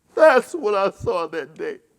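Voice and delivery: tearful, crying voice. A speaker recalling what they saw that day, crying.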